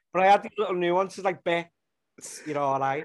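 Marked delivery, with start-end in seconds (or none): 1.4-3.0 put-on broad, thick Liverpool accent. Speaker acting out a woman who bumps into a mate in Iceland, broad Liverpool accent. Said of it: "Which people in Liverpool speak like that".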